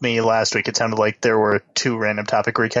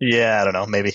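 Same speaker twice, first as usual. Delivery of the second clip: dry, flat deadpan tone. On a show, debating which host is the deadpan one, answering in a deadpan voice. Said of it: "you've got that deadpan voice going right now".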